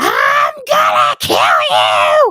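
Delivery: very loud, very high, drawn-out shrieking scream. Retelling how a patient started screaming at the speaker: imitating a patient screaming. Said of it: "she starts screaming".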